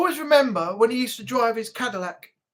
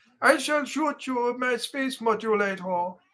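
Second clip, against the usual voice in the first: classic cartoon space-alien voice; 3 dB quieter than usual. Recalling a childhood habit, doing a Marvin the Martian voice. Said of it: "I used to go around saying".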